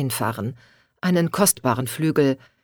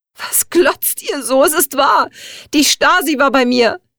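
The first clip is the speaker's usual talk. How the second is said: very high, loud tearful scream through sobs; 11 semitones higher, 6 dB louder than usual. The sister-in-law turns on her frozen, silent family, screaming in tears. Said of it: "Schrie Katja unter Tränen".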